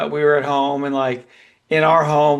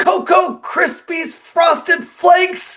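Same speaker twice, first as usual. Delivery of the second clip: put-on cross, angry toddler outburst, pitched high; 3 dB louder than usual. Retelling how a two-year-old cursed when upset, imitating an angry outburst. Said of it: "he just got all angry and he said".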